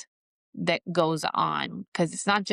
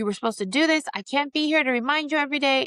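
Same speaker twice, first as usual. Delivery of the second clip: high, snapped, overwhelmed, fed-up yell; 9 semitones higher than usual. A mother retells what she said to her child when she snapped, retelling a yell. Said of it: "And I yelled".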